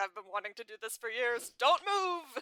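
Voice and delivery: put-on shouting voice. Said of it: "He's like".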